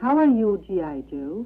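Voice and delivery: put-on sultry high Vietnamese accent. Explaining wartime radio propaganda to the others: imitating Hanoi Hannah's sultry Vietnamese-accented voice. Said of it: "in the sort of sultry, sultry Vietnamese voice".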